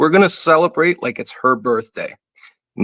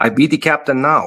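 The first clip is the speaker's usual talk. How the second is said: French-accented speech; 3 semitones higher than usual. Turning to Karen on the show, saying a line in a French accent. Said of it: "I'll say it with my French accent".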